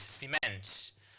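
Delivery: cement stressed on second syllable, ce-MENT. Explaining word stress, says cement stressed on the second syllable. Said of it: "you stress on the second syllable here".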